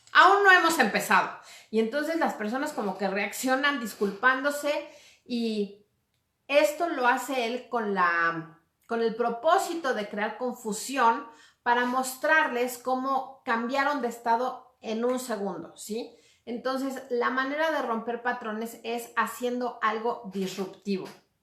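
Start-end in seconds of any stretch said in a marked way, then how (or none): 0.2-1.3 loud, high, firm, authoritative tone. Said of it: "en un tono firme y autoritario".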